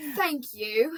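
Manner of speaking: put-on British accent. Thanking a Patreon subscriber, showing a British accent. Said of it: "How do you say thank you in a British accent?".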